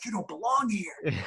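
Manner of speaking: acted, contained, high, held-back scream. Describing their show, the speaker acts out what they yell during it: retelling a scream. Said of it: "i'm screaming i'm yelling and i'm like".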